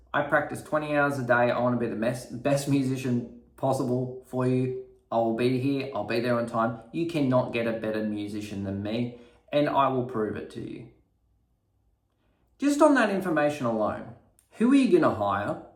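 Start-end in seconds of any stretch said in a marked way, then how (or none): none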